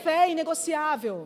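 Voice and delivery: loud, high proclamation, each word proclaimed.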